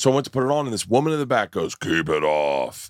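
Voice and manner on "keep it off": very low, real deep voice. Retelling a heckle from a woman in the back: imitating a woman's real deep voice. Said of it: "real deep voice".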